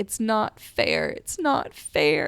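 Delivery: yelling stretched out, with pitch swooping. Speaker recounts what they yelled a couple of days ago, retelling their own yelling. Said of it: "I was just yelling like".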